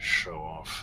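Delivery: muttered under breath. During the game, reacting to another character's flashy move, muttered under breath. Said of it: "Under my breath".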